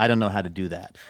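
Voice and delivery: dry, flat, expressionless deadpan. Retelling what a server said when asked to tear bread out: imitating a deadpan reply. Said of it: "deadpan and goes".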